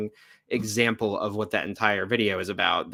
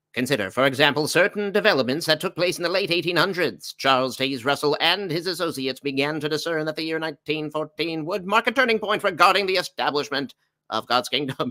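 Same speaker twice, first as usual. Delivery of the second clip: put-on old-fashioned voice, pitched up; 5 semitones higher than usual. Reading a paragraph about the eighteen hundreds aloud, in an old-timey voice. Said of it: "I'll do the old timey voice".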